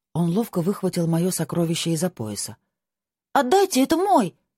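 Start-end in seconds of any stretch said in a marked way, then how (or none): 3.3-4.3 very high, loud crying-out shout. The narrator shouts at a man who has just snatched her sword. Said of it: "крикнула я".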